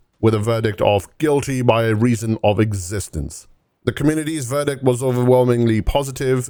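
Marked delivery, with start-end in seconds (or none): none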